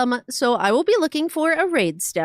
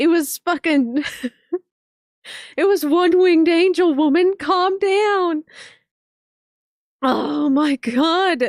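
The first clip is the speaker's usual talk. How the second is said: weepy, tearful, pitched-up crying through the words; 5 semitones higher than usual. Hearing Final Fantasy seven music, speaking while crying. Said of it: "I don't know why I'm crying".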